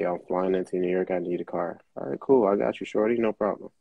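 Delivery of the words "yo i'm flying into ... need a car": ordinary talk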